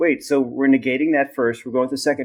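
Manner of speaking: plain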